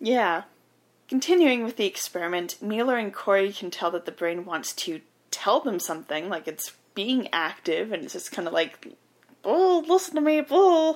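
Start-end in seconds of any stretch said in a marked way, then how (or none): 9.4-11.0 tiny, very high-pitched voice. Speaker describing an experiment where a brain tries to communicate, brain in a jar voice. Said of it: "That's my impression of a brain in a jar".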